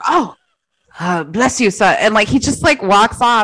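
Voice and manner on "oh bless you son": slower, bad put-on Irish accent. Speaker retells a priest's reply, in an attempted irish accent. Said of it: "I can't do an Irish accent".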